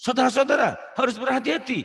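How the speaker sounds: impassioned, fiery orator cry, pitched very high. Showing how a true orator should address the audience, fiery orator delivery. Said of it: "Gini-gini nih. Nah itu penuh berapi-api ya, orator gitu loh".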